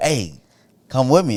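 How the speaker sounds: plain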